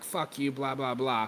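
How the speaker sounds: plain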